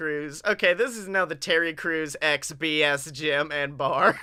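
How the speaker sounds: plain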